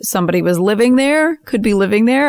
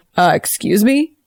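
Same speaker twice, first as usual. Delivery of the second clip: assumed masculine voice. Playing a character disguised by illusion, answering in a manly Felix Ortman voice. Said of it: "she's gonna say in a manly Felix Ortman voice".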